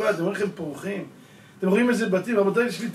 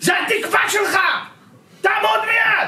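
shrill, very high, loud shouting; 13 semitones higher, 6 dB louder than usual. Recounting how a woman yelled at him as a ten-year-old boy: retelling her shout. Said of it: "וכשהיא צעקה לה".

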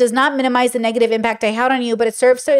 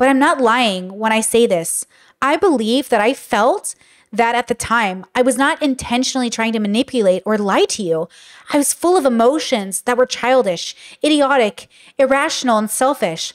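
plain

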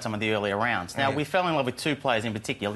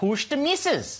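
very high, swooping, put-on Scottish accent. Trying the Scottish version of the bit, the speaker puts on a Scottish accent. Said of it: "but this is Scottish version".

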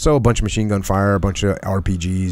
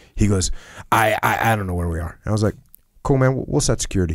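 ordinary delivery

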